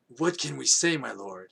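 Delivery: rasping, hoarse, horsey character voice. Reading a story aloud, voicing a character's reply, in a hoarse voice. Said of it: "that horsey voice".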